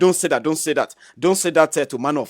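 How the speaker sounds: usual speaking voice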